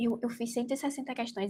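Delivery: hushed secretive whisper. Recounting telling someone her exam score, re-enacting a secretive whisper. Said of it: "falei baixinho, parecendo que era segredo".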